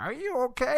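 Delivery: very high, soft, hushed witch voice. Speaker retells how a woman's question sounded to them, in a witch voice. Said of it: "like a witch voice".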